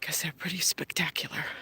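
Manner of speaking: soft, unvoiced whisper.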